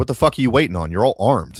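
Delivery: loud, furious, angry ranting outburst. Acting out how a founder would scold patriots: imitating an angry rant. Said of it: "he would be angry as fuck".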